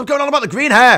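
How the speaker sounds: very loud, high, fed-up, annoyed outburst. Responding to repeated comments, the speaker gets annoyed. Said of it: "Getting annoyed now".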